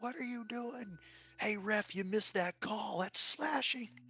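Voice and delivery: put-on, very high, kid-like yelling and screaming. Describing two young kids at a hockey game, the speaker is imitating kids screaming. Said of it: "like screaming at the guys on the ice".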